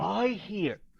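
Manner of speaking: hushed, very quiet, barely audible half-whisper. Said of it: "but he's whispering".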